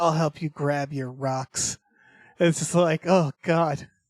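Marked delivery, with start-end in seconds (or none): 0.0-1.8 put-on saucy voice, lower and quieter. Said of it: "She says it with just such fucking sauce on it".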